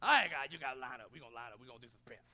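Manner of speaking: very loud, deep, booming, barely intelligible coach yell. Imitating a man who needed an interpreter as he told the guys to line up, like a guy from The Waterboy. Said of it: "He sounded like a guy from Bobby Boucher or something".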